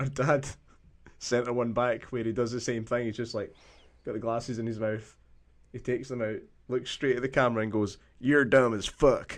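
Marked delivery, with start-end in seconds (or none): 8.2-9.4 put-on, slow Southern US drawl. Quoting her dad's video to the camera, in a Southern American accent. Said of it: "this kind of Southern American accent".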